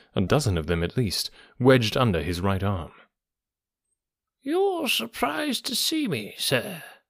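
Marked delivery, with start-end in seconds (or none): 4.4-6.8 strange croaking voice, very high-pitched and slow. Narrating an old book collector who has come to the narrator: strange, croaking voice. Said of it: "said he, in a strange, croaking voice".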